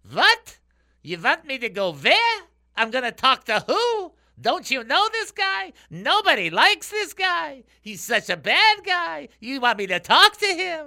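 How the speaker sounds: Yiddish-accented voice.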